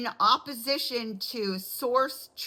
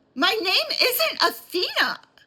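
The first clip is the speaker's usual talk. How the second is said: heated, shrill voice, pitched very high; 11 semitones higher, 5 dB louder than usual. Retelling her answer to the woman behind the glass who used the wrong name: retelling a heated retort. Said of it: "I'm starting to get heated".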